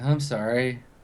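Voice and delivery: mumbling, muttering. Voicing a man slumping to his knees: mumbling. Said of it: "slumps to his knees and then just mumbles like".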